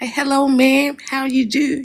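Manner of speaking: put-on light southern accent. Describing how a woman talks, imitating her light southern accent. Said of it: "a lighter sort of like southern accent".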